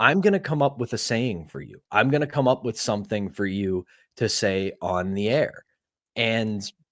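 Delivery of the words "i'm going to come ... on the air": ordinary talk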